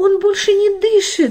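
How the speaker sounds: very high, shrill, terrified scream. Reading a story, a grandmother sees her grandson's face turning blue: frightened scream. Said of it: "испуганно закричала бабушка".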